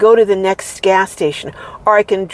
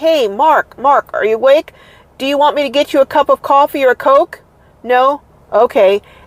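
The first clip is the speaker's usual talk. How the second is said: chatty, pitched-up, staged, showy voice; 6 semitones higher than usual. Getting out of the car alone, speaker knocks on the back window, loud voice. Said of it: "I'll say something in a loud voice".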